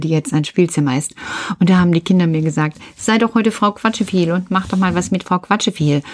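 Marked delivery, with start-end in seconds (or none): none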